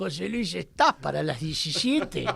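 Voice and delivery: put-on old-time radio drama voice. Guest on a radio program retelling a phone call to him, in Oscar Casco radio-drama voice. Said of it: "con esa vocecita de radioteatro".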